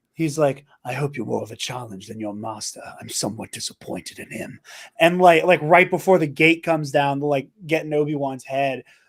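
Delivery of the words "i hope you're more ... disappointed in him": menacing, threatening whispered villain voice. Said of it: "Maul has, like, an anime villain line".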